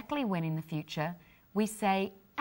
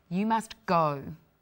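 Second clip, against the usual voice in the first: authoritative tone; 4 dB louder than usual. Demonstrating how inflection changes meaning, ordering someone to go away. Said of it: "ordering someone to go away".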